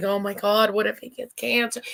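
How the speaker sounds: crying, high-pitched, tearful and worried. Retelling watching a commercial while worried about a child: retelling tearful worry. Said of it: "I'm sitting there crying".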